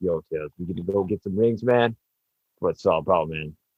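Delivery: relaxed, low, chill grown-man street-talk voice. Joking about what a real hedgehog sounds like, grown-man voice. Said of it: "He, he sounds like a grown man".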